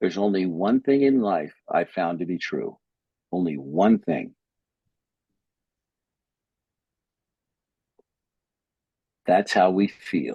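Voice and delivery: slow, unhurried, deliberate, weighing each word. Speaker, talking to Alan, announces the next part will be said slowly: speaking slowly. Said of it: "I'm going to say this slowly".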